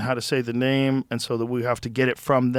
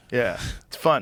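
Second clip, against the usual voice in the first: ordinary talk, nothing marked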